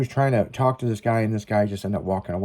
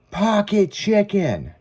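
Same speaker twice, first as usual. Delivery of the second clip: play-acted, high, shrill shouted yell; 11 semitones higher than usual. Retelling how a guy in a packed crowd yelled at the DJ: imitating a guy yelling. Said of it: "this guy yells".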